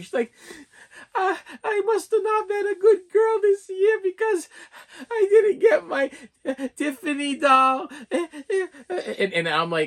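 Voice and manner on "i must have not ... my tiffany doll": put-on very high, teary little girl voice, sobbing. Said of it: "starts crying".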